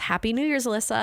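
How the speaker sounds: ordinary talk, nothing marked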